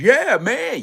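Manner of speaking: put-on loud shouting. Imitating someone smiling and yelling into a mic: imitating someone yelling. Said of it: "yelling like the motherfucking mic is on a hundred".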